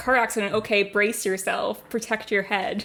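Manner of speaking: normal talking voice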